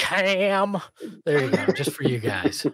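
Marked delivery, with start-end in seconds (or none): 0.0-0.8 pitched-up, stretched-out calling of a name. Filling in for a missing show member, calling a player's name: imitating Saul. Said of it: "That was my Saul impersonation".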